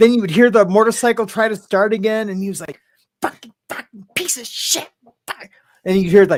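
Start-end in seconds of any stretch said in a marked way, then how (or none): 3.2-5.5 hushed, breathy, whispered, furious angry cursing. Retelling hearing someone kicking and screaming at a motorcycle: imitating someone screaming curses. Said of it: "kicking and screaming".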